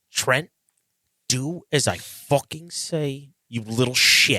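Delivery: angry outburst, lashing out. Urged to yell too, lashing out at another character angrily. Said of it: "I shouldn't have lashed out at you".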